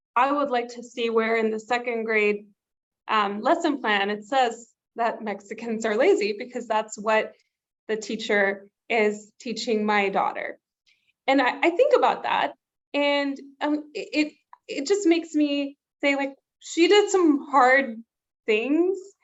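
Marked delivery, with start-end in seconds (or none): none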